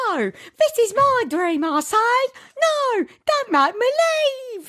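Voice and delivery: put-on very high-pitched, slow Cockney accent. Retelling a dream scene where a character is escorted out: Cockney Blair voice. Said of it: "Cockney Blair".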